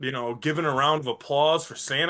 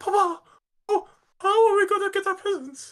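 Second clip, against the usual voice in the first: put-on very high, small child's pleading voice. Retelling everyone gathering after Santa leaves, imitating a little kid asking about presents. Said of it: "that little kid that's like".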